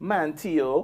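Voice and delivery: put-on Bajan accent. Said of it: "the only thing she got pretty right".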